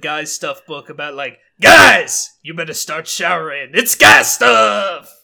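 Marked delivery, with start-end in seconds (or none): 1.6-5.0 booming, rough, hyped-up monster truck announcer voice. Describing a book for guys, the speaker does a monster truck announcer voice. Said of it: "like a monster truck announcer".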